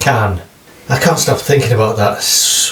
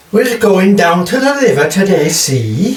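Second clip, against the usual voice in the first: put-on, high-pitched Welsh lilting accent; 7 semitones higher than usual. Taking another turn at the accent game, the speaker does a welsh accent.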